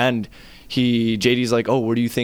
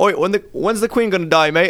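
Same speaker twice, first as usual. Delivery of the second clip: put-on British accent, pitched up; 8 semitones higher, 3 dB louder than usual. Retelling what a buddy suddenly asked, in a put-on British accent. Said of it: "talking to each other in British accents".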